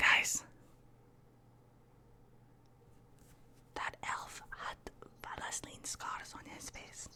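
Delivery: hushed whisper, barely voiced. Leaning into the group as a character to share a secret: whispering. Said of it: "I'm gonna whisper".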